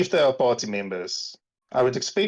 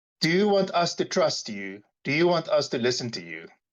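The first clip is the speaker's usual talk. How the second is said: sugary, falsely sweet, insincere tone; 2 semitones higher than usual. Recapping a scene where Zeke questions Greed: Zeke's falsely sweet voice. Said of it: "in a falsely sweet voice".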